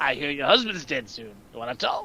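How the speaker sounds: put-on gravelly voice. Acting out a movie scene, threatening a father: gravelly Slappy voice. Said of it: "the guy with the gravelly voice".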